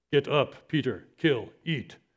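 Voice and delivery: kind of a caveman-like delivery. Retelling how Jordan quoted a Bible verse to the speaker, in a cavemanish tone. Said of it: "in kind of a cavemanish tone".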